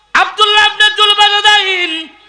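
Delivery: high preacher voice, calling out.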